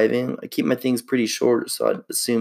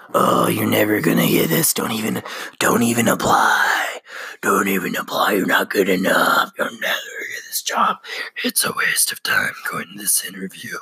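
demonic voice. Speaker recalling doubts before applying for a job, doing the inner demon voice. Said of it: "that demon voice in the back of my head".

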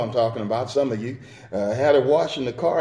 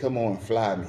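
mock kind, inviting voice, soft and low; 4 semitones lower, 7 dB quieter than usual. Acting out somebody giving a wink to get people flying: imitating a kind voice. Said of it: "saying with a kind voice".

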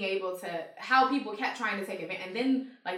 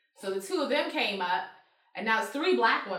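plain

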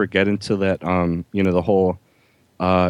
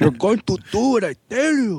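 mock Japanese accent, higher; 13 semitones higher than usual. Quoting a movie villain with a peculiar accent: imitating a mixed Japanese and Chicano accent. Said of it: "he had a peculiar accent".

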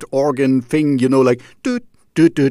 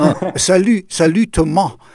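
silly fake French accent, pitched up; 5 semitones higher than usual. Greeting and thanking a guest at the end of a call, in a silly fake French accent. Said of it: "I stop the silly accent".

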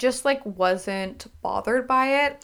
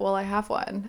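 muttering under breath, much quieter; 7 dB quieter than usual. Retelling a man's reply after being asked about kids, muttered under his breath. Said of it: "he was kind of like under his breath like".

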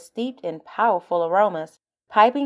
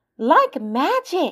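high, gasped, caught-breath exclamation; 8 semitones higher than usual. A woman in a crowd seeing a man hold up her stolen watch, gasping. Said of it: "the woman gasped".

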